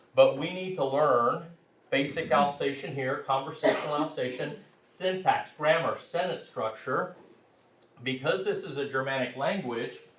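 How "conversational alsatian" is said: ordinary talk, nothing marked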